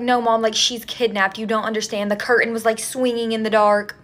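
ordinary delivery

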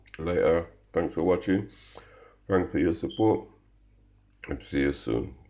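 speaking with mouth full, chewing. Signing off a cooking video while starting to eat: speaking with mouth full. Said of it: "Sorry about speaking with my mouth full".

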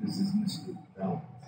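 whispered, breathy, hushed, seductive voice. Host introducing himself at the start of the show, sexy voice. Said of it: "I've got my sexy voice tonight".

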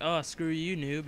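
ordinary talk, nothing marked

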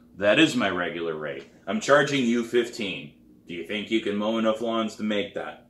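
ordinary delivery

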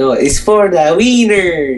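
loud, high, put-on Italian accent. Signing off a gaming video, correcting the sign-off, in a put-on Italian accent. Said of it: "It's my Italian voice".

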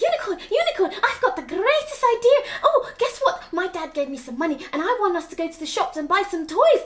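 loud, rushed, overexcited babble, words tumbling out. Reading a story, a character rushes to share an idea: overexcited rushed talking. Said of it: "with all that excitement".

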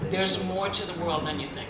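plain

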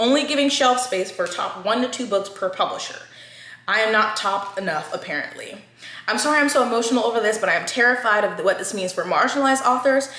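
ordinary talk

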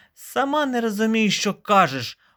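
offended, put-out, high, indignant tone. Narrating a story, the beetle answers the caterpillar, indignant. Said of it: "обурився жук".

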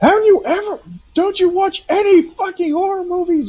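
very high-pitched whispered yelling. Retelling how he reacted when she went to follow something, retelling a whisper-scream. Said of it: "he's whisper screaming".

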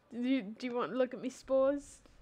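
fake, mock British accent. Mocking a co-host's british bit back at him, mock british accent. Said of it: "replaced him with a British person".

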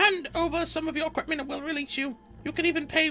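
loud put-on gnome voice. Voicing a band of poorly armed gnomes confronting the group, declaring loudly. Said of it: "the gnomes declare loudly".

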